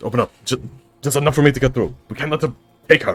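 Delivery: very hectic, frantic, frenzied delivery. A character in a role-play scene addresses people at a fence; very hectic tone. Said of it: "In a very hectic tone".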